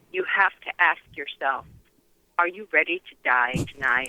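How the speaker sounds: ordinary talk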